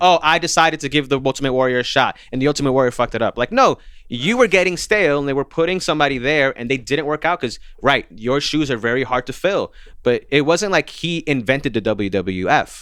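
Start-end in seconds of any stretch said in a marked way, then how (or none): none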